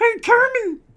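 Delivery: shrill, loud, high squealing pig diva voice. Doing Muppet voices during an interview, the speaker switches to a Miss Piggy voice. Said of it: "that's Miss Piggy".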